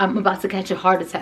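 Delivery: ordinary talk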